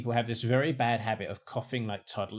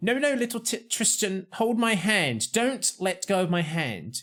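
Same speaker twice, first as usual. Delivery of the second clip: stern parent voice, scolding; 9 semitones higher, 3 dB louder than usual. Retelling squeezing past a family on the pavement, imitating a scolding parent. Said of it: "too busy like disciplining their children".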